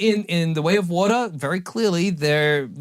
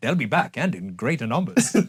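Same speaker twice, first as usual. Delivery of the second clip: put-on British actor voice; 3 semitones lower than usual. Joking about reviving a dead actor: Alec Guinness impression. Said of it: "Best Alec Guinness impression".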